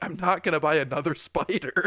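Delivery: put-on exasperated voice. Retelling a character's refusal to buy a spider: imitating exasperated Cyril.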